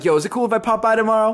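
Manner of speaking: playful, joking delivery. Speaker retells what a guy said to them: retelling a joking remark. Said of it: "he comes through jokingly".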